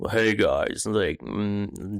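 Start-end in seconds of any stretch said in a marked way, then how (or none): 0.1-0.9 low, dark, deep voice. Showing how they can sit here and sound different, dark, deep voice. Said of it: "dark, a deep voice".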